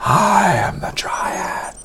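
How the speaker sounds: very slow, hushed, whispered undead voice. Reading the dryad's line, in an undead-sounding voice. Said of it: "that's like an undead voice".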